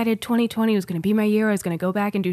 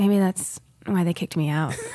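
acted bashful, shy, lip-gnawing delivery. Describing how a woman says things, the speaker does a mock-shy lip-biting voice. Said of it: "she says it in like such a like shy, like lip bitey way".

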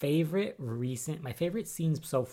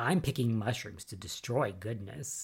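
put-on distorted voice, faster. Retelling a scene where Charity turns and smiles, in distorted Charity voice. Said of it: "with a distorted voice".

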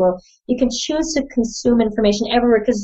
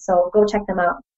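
ordinary delivery

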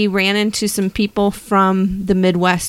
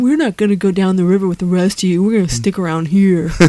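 put-on voice of a teenage bat. Joking with a co-host about bats that stay behind, teenage bat voice. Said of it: "that's what their voice sounds like".

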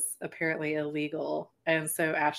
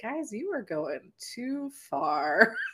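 dry and unbothered, higher pitch; 6 semitones higher than usual. Retell Seth Green's reaction to something extreme, as a deadpan Seth Green impression. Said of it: "in the most, like, deadpan Seth Green kind of way".

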